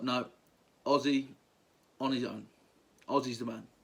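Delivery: ordinary talk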